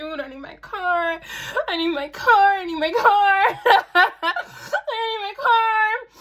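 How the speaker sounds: put-on very high, drawn-out, wailed sobbing. Retelling daily calls to the man holding her car: acting out crying on the phone.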